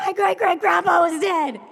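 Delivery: loud yelling, high-pitched. Telling a story, quoting what she yelled as he came in; retelling her yell. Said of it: "she was yelling".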